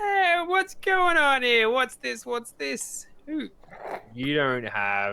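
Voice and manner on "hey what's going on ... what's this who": put-on very high, swooping drunken old man voice. Playing an old geezer who questions who is there, drunk old geezer voice. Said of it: "He sounds drunk".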